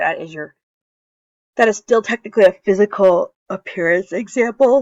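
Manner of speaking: very loud words spoken through a yawn. Reviewing biology for listeners, the speaker keeps explaining while yawning while speaking. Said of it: "I'm like yawning".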